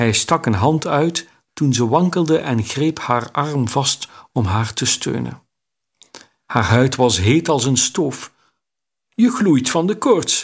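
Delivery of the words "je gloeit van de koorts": sudden, high, pitched-up crying out. A man steadies a trembling woman and feels her skin burning hot: exclaimed. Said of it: "riep hij uit".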